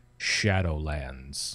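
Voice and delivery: deep voice dropped low. Saying the title shadowlands with the voice dropped low. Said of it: "You have to drop your voice down like that".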